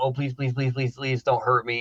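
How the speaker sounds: mock pleading, begging tone. Acting out someone on hands and knees before an executioner: imitating someone begging. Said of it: "on your hands and your knees going".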